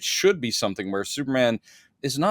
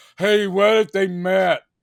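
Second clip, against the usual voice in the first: clueless, dopey, duh-obvious tone, pitched up, loud; 7 semitones higher, 5 dB louder than usual. Podcaster mocks a comics studio copying a rival's cinematic universe: DC impression. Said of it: "That's my impression of D C just going".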